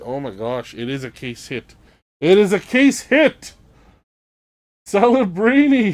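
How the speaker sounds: thrilled, growing excitement, rising burst of delight. During a card break, announcing a case hit card, excited. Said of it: "I'm a little excited".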